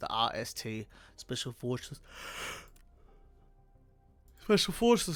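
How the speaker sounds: speaking through a yawn. Reviewing helmets early in the morning, speaking through a yawn. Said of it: "Sorry for yawning there".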